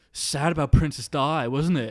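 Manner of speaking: imitated bellowing woman's voice. Retelling what a woman with a walking stick said on learning they were English, bellowing. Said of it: "her voice like bellowed".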